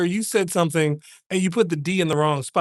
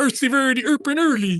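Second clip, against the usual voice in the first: put-on mock-Swedish gibberish voice; 6 semitones higher than usual. Joking about a mixed-up phrase: Swedish Chef voice. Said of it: "That's a Swedish chef right, right there".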